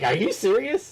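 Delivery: high, loud tone of amazed disbelief.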